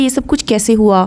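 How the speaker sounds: plain reading voice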